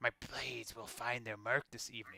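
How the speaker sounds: scratchy, raspy put-on voice. A narrator voices an unseen figure heard from around the corner, scratchy voice. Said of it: "you hear that same scratchy voice".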